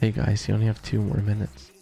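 put-on sleepy, pillow-talk voice. Mimicking how Quinn announced two minutes left, Quinn's mock-sleepy voice. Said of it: "this is what Quinn sounded like... Like your sleepy voice, bro. Like you pillow talking us".

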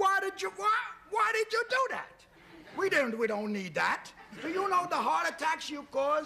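outraged, angry yelling.

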